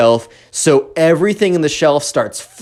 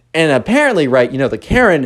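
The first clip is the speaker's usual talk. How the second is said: ordinary talk, nothing marked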